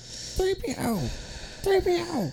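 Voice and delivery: very high, slow, whiny put-on voice.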